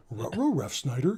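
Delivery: animated dog voice. Explaining a favorite player's name, the speaker says it as Scooby-Doo would: Scooby-Doo voice. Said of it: "say Ron Rovoltelt in a Scooby Doo voice".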